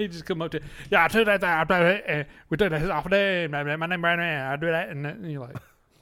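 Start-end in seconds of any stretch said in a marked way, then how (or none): 0.9-4.9 loud, garbled, jumbled, half-sensible rambling. Retelling how an old neighbor's brother talked: impression of neighbor's brother. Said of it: "I got a perfect impression of him".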